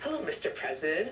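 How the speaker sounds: ordinary delivery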